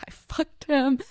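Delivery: tearful, sobbing voice, crying through the words. Telling about an upset woman at a party, imitating someone crying. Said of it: "she's just crying".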